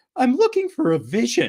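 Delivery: very high, loud voice cracking and popping everywhere. Imitating a character from a trailer trying to find a woman, very bad impression, voice popping everywhere. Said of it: "I'm going to do a very bad impression".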